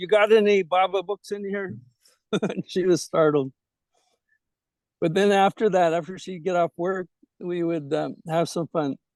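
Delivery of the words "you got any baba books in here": mock loud, gruff put-on voice. Retelling walking into the tourist shop where she worked, retelling in a loud gruff voice. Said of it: "in a very loud, gruff voice".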